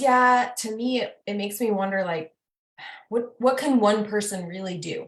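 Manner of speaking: play-acted, beaten down and dejected tone. Retelling what the dad said: imitating a defeated tone. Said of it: "he was saying it in a very, like, defeating way".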